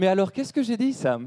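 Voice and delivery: much gentler, sweeter tone. Retelling Anya's question to Sam, changing your intonation to imitate Anya's softer voice. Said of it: "elle est beaucoup plus douce que ça. Je devrais. Attends, je change d'intonation".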